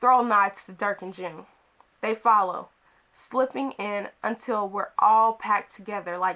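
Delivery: ordinary delivery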